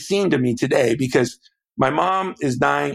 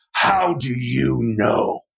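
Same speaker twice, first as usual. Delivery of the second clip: tough, gruff growling voice. Retelling how his old dad grabbed him by the shirt, retelling dad's growl. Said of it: "And he just growls".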